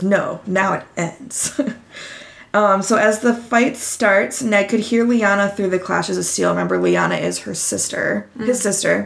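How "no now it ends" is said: mock-badass tough voice, much slower. Retelling a story where one fighter answers another's challenge, retelling a badass reply. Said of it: "Ned goes like a badass and goes".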